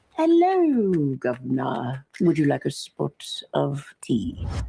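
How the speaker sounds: put-on British accent. Asked whether they can do a British accent, answering with one. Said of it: "Can you do a British accent?".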